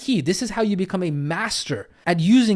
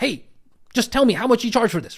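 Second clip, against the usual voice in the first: pushy, in-your-face, aggressive, demanding delivery; 4 semitones higher than usual. Acting out a prospective student on a call, mock-aggressive demand. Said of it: "They're very aggressive".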